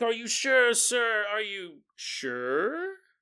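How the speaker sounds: weird, very slow, oddly stretched, drawn-out delivery. Retelling a priest at the door asking again: imitating a weird delivery. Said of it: "Why'd you say it all weird like that?".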